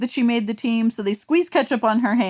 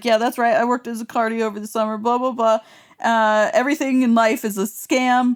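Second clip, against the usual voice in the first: normal talking voice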